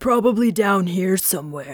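lowest possible deep, low-pitched voice. Showing learners how low a character voice can go: really low voice. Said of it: "let's try a really low voice".

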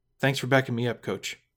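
ordinary delivery

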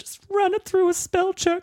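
put-on weepy, trembling voice. Retelling a film scene, imitating a trembling woman answering tearfully. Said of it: "trembling woman stands up ... tearfully".

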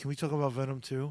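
put-on sheepish voice. Retelling their own earlier question to the other speaker, sheepishly. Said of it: "almost sheepishly".

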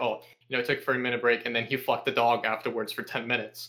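ordinary delivery

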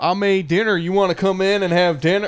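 put-on Cajun accent. Retelling a video game character's words to the player, in a Cajun accent. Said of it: "That's a great Cajun accent".

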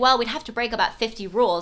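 play-acted breezy, casual, nonchalant throwaway tone. Discussing a book, the speaker quotes a character's suggestion, mock-nonchalant. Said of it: "she says that so nonchalantly".

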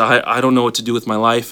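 acted blubbering, sobbing like a baby. Retelling how his dad broke down in a bar, acting out crying like a baby. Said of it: "just starts crying like a baby and just says".

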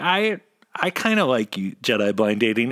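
ordinary delivery

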